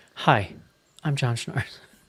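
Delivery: put-on laid-back jazz radio voice. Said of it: "and he comes up and he's just like".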